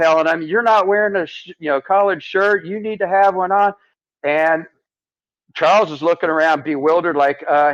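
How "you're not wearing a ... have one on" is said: put-on high, angry screaming. Retelling how one man screamed at another, imitating the screaming. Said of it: "He's screaming at".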